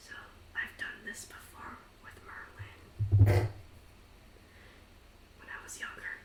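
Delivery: hushed, whispered aside. Voicing Kane explaining a plan in a huddle: character whispering. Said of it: "as he's in the whispering".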